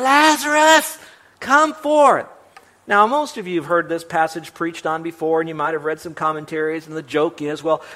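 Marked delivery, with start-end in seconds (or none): 0.0-2.3 very high, loud shouted yell.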